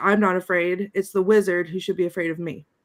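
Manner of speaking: ordinary talk, nothing marked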